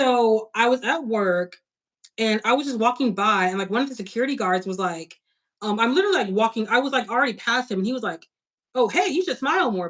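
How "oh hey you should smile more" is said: play-acted, jarring, abrupt, out-of-nowhere call-out. Retelling a security guard's remark at work: imitating a jarring remark. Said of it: "he said it so, like, jarring".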